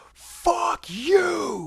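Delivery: very high, shrill, full-lung scream with "you" drawn out. Recounting a woman at a venue who got in their faces: retelling a scream at full volume. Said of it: "gets in our faces and screams".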